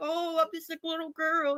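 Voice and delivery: high, soft, whimpering little-girl fake sobbing. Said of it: "started crying like".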